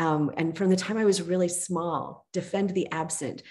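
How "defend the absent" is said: plain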